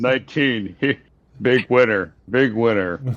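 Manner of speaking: unexcited casino dealer impression. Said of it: "just dead inside".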